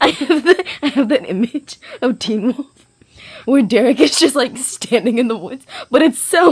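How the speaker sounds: laughing hard while talking. Describing an image from Teen Wolf, laughing hard while talking. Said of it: "I can't breathe".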